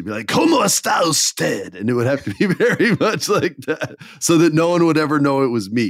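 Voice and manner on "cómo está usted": cartoon villain voice with swooping, swinging pitch. Describing a disguise he would wear, saying a Spanish phrase in Mark Hamill's Joker voice. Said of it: "I would speak Spanish like in Mark Hamill's Joker accent".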